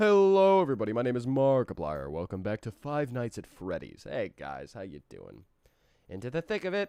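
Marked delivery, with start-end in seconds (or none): 0.0-4.1 belted-out video channel host intro voice. Opening a stream with a Markiplier impression. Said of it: "I just wanna do a Markiplier impression".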